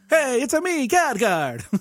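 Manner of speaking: very high, slow, drawn-out, comic Italian accent. Joking that the game is translated into Italian: Khadgar with Italian accent. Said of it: "translated into Italian?".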